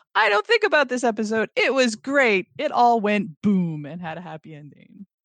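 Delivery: carefree, unthinking, gushing delivery. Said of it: "as opposed to go like".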